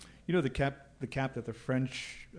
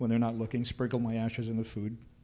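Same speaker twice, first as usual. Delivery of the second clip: ordinary talk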